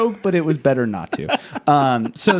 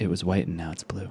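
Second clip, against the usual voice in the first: grand on-stage keynote announcer tone; 10 semitones lower, 10 dB quieter than usual. Mocking a company announcement: Mark Zuckerberg impression. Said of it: "Mark Zuckerberg gets up and he's like".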